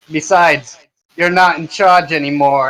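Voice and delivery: big, loud, resounding booming delivery. A quartermaster confronts the committee, booming voice. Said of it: "He takes it and he puts it on, / he's in a booming voice".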